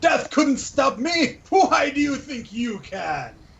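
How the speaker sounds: very high war cry, acted in character. Voicing a character striking with a sword: in-character battle shout. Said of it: "I shout".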